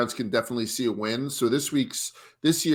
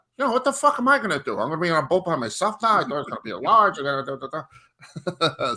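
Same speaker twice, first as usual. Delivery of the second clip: pitched-up, indignant, griping rant voice; 5 semitones higher than usual. Retelling a call from a friend about a trip, imitating Eddie. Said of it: "my Eddie impersonation of the week".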